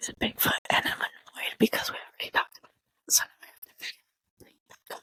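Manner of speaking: quick, rushed secretive whisper. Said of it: "whisper it really fast".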